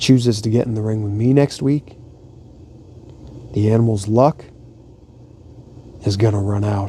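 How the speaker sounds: gently spoken, soft, quiet and hushed. Relaying what Big Show says about Batista, in a soft, quiet Big Show voice. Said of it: "he really does say it like this, like softly and quietly".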